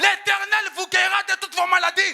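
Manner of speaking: loud, high-pitched shout.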